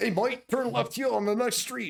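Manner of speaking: very high, botched Australian accent. Discussing Siri's different voices, one speaker tries the Australian version; bad Australian Siri voice. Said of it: "It's my Australian voice".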